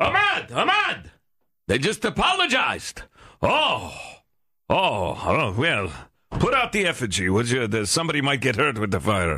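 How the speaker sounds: put-on Middle Eastern accent. Speaker plays a man reacting to an apology video, mock Middle Eastern accent. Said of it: "that's a Middle Eastern man".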